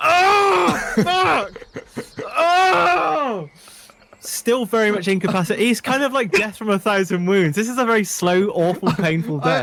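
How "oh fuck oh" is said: acted pained outcry, higher. Voicing a wounded character whose pinky was just cut off: wounded character crying out in pain. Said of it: "it severs the top of his pinky off".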